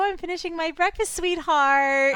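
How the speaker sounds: put-on sweet talk, mocking. Retelling a couple's talk, imitating fake, forced affection. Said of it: "it's so fake and forced".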